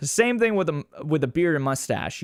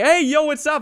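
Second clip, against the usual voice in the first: very high, loud, rowdy shout; 13 semitones higher, 6 dB louder than usual. Retelling a classmate greeting loudly in class: imitating a loud classmate. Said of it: "He was so loud".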